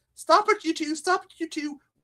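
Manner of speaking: very high-pitched scolding voice. Retelling a mother scolding two wrestling boys: imitating his mom scolding. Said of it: "she'd be like, telling us".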